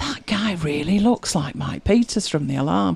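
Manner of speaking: acted-out whispering. Recounting whispering to mike about a lookalike, retelling a whisper. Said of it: "I'm whispering to Mike".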